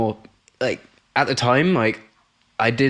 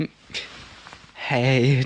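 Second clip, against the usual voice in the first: put-on trembling, shaky, nervous and hesitant delivery; 3 dB quieter than usual. Recounting working up to asking someone out at school, retelling a shaking voice. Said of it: "like proper like shaking in my voice".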